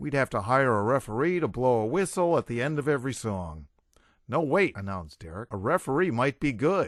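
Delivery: plain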